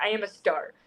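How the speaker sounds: full-on sassy, showy, declaring voice. Retelling how the teacher would talk: imitating a sassy teacher.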